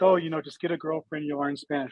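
ordinary talk

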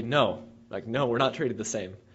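acted, speedy delivery shot straight back, rattled off. Retelling an interview answer to a question on equal treatment: imitating a loud, quick reply. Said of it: "very quickly and very loudly".

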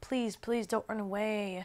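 put-on crying, begging. Retelling begging him not to run away, reenacting crying pleading. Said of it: "I started crying".

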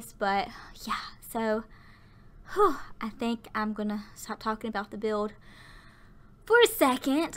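out of breath, catching their breath. Doing a voiceover about a room build, catching their breath; out of breath. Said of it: "I'm trying to catch my breath".

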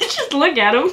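laughing uncontrollably. Looking at an unmasked helmet with a friend, laughing hard. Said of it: "Why are you laughing so hard?".

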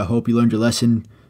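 ordinary talk

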